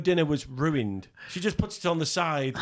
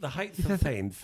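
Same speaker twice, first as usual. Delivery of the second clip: put-on posh voice with a lisp; 3 dB quieter than usual. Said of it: "That was my [name] impression".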